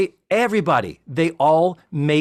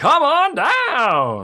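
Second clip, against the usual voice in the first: bad, pitched-up announcer voice, swooping then stretching down; 8 semitones higher than usual. Recalling a game show announcer's opening call, speaker tries a bad Johnny Olson impression. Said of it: "There's the voice I can't do".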